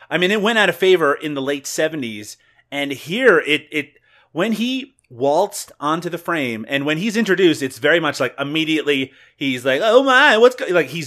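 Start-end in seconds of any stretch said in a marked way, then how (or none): 9.8-10.6 put-on exaggerated swishy voice, higher and louder. Describing a film character's entrance: imitating a swishy caricature voice. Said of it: "he's just doing the voice and doing the mannerisms".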